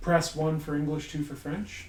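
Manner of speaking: normal talking voice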